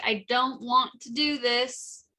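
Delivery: mild, contained half-shouted yell. In a tabletop game, a character fighting wolves calls out: yelling. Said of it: "he's yelling like".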